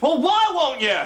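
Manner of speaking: very high-pitched shouting. In an exchange about marriage and naming a grandson, pressing the other person, shouting. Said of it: "you're shouting".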